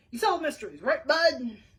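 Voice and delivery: gruff, loud, barking voice. Reading a story aloud, a caller on the phone: gruff barking voice. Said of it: "A gruff voice started barking questions".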